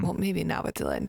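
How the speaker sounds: ordinary talk, nothing marked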